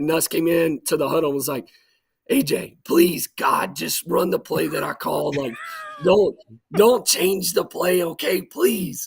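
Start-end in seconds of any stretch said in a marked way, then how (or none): 2.3-9.1 rough, raspy, rasped-out voice. Retelling how Nuss pleaded in the huddle, in Nuss's raspy voice. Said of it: "Nuss had like a raspy voice".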